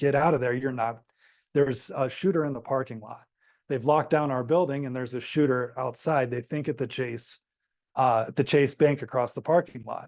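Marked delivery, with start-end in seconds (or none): none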